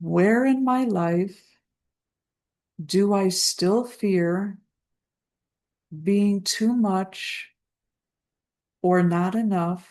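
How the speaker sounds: slow, spaced-out, dictation-like delivery. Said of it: "I'll say it slowly so you can write it down".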